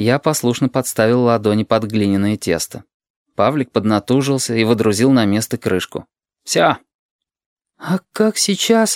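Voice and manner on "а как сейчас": cautious, hesitant, wary, slightly raised pitch. The narrator, looking at the barrel, asks his companion warily. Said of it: "начал я с опаской".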